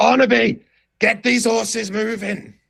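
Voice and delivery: put-on impatient older man voice, very high, drawn-out yell. Narrator voicing an older man yelling at a younger man pulling the horses, yelling older man. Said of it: "And then he starts yelling at like".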